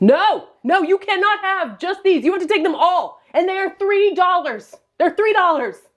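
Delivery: put-on high, worked-up yelling, completely losing control. Retelling a yard sale clash with a buyer, retelling own yell. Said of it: "I was yelling".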